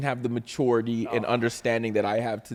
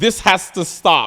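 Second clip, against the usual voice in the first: put-on child yelling, higher and louder; 8 semitones higher, 8 dB louder than usual. Retelling how the daughter followed someone around the house: imitating a child yelling. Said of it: "she's yelling at everybody in the house".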